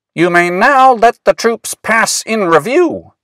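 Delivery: very high, barked, commanding parade-ground shout. Willis, standing at attention, answers a policeman: shouting. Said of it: "shouted Willis".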